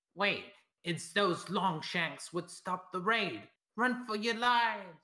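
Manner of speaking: very loud, high, shrill, screeching panicked goblin shriek. Voicing a goblin who drops his weapon and flees: shrieking goblin. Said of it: "shrieks out in Goblin".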